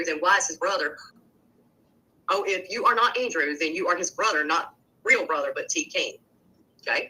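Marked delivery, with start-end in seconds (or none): none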